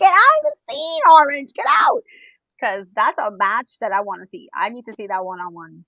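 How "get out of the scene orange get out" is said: very high, shrill, very loud screaming yell. Retelling yelling at orange to leave the match: imitating own screaming. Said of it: "We were screaming".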